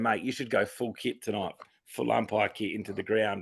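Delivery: ordinary delivery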